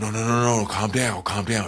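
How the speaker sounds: gentle, soothing, coaxing tone. Retelling teammates rushing up to calm him during the playoffs: imitating teammates' soft voice. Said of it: "with the soft voice like".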